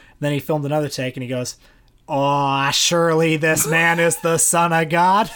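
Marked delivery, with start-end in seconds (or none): 2.1-5.3 mock-awed movie-star impression, slower pace. Retelling a director asking for more awe on a retake, John Wayne line with mock awe. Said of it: "could you try saying it with a little more awe".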